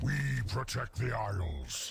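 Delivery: big, burly, strong manly voice. Greeting the player as an ambassador: big strong man voice. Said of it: "that's a big, strong man voice right there".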